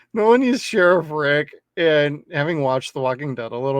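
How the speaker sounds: normal talking voice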